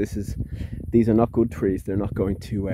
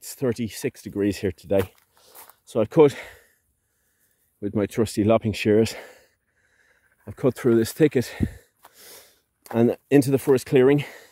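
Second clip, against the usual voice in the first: out of breath, winded, short of breath. Cutting through a thicket with lopping shears in the heat, speaking out of breath. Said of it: "I'm a bit out of breath".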